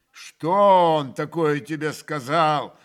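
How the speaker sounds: irritable, grumbling voice. A man just scolded by a woman replies to her: irritable grumble. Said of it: "раздражительно проворчал Ракитин".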